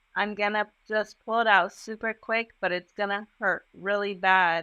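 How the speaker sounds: plain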